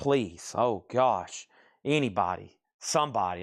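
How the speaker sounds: slow, drawn-out begging tone. Retelling begging bidders to bid on an item: retelling own begging. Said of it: "I was like".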